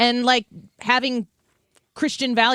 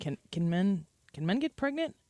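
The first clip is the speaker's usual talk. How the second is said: senator-style delivery, stumbling twice; 2 semitones lower, 10 dB quieter than usual. Retelling a hearing question, imitating Josh Hawley. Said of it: "Like the Josh Hawley".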